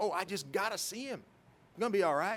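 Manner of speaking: put-on not-great Southern accent. Retelling how a boy talked his way past the first barrier, not-great southern accent. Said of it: "I don't have the best Southern accent".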